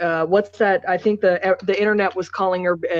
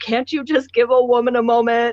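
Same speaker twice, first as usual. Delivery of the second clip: a woman screaming, pitched up; 5 semitones higher, 3 dB louder than usual. Retelling a scene where she yells at honking cars while driving off: imitating a woman screaming. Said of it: "she's screaming at the top of her lungs".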